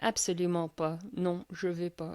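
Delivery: quiet, curt delivery in Parisian French. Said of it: "would not speak English with him".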